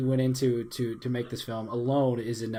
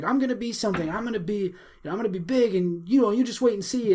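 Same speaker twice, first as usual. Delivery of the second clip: mock screaming, high, insistent, hard defiance; 8 semitones higher, 3 dB louder than usual. Retelling a film scene of a son answering his mother: imitating someone screaming. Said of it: "he's screaming".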